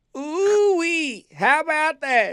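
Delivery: clenched high cartoon voice. Having a go at an impression, doing a Justin Roiland impression. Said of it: "one I've ever heard you do".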